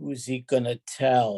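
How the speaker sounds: acted conspiratorial, secretive tone, dropped low. Telling a joke, answering the angel as God in a low conspiratorial voice. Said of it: "God says in a low conspiratorial voice".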